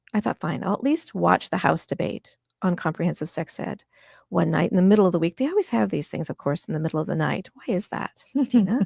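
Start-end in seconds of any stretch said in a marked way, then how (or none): none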